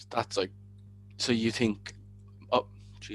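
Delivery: soft, breathy stammer, tripping over words. Explaining a view, the speaker stumbles and starts stuttering. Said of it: "sorry, I'm stuttering there".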